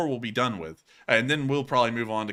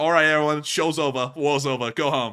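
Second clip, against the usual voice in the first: put-on New York accent on the whole line; 3 semitones higher, 4 dB louder than usual. Host putting someone's remark into a joke voice for viewers, New Yorker accent. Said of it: "I just had to think of that man in a New Yorker accent".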